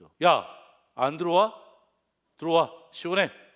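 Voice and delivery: loud, high-pitched, angry scolding tone. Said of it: "화를 내죠".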